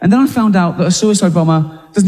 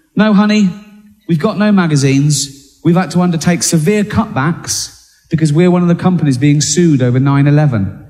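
plain

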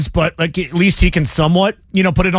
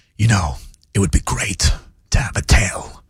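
whispered, leaning-in delivery; 9 semitones lower than usual. Showing a whispering Christopher Walken impression, quoting a story. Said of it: "lean in".

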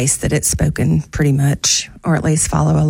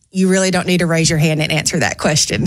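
usual speaking voice

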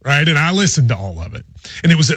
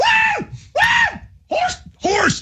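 put-on very high, slow, drawn-out celebratory whooping yells; 3 dB quieter than usual. Speaker describes a winner celebrating, retelling a celebratory yell. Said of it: "he's yelling and pointing at people".

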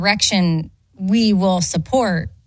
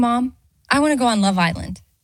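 ordinary talk, nothing marked

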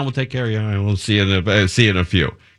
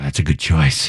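confiding, secretive stage whisper; 7 semitones lower than usual. Retelling how a restaurant worker answered an order: imitating a whisper. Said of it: "He, like, whispers".

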